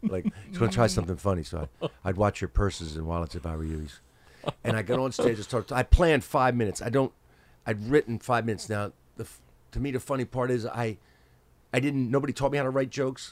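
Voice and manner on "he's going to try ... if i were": put-on voice, lower pitch. Retelling how a seventies DJ introduced the next act: imitating a warning voice. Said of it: "it was a warning".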